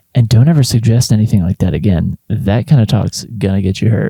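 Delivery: low voice. Playing a gangster in a story, the speaker warns the other person in a low voice. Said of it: "I add in a low voice".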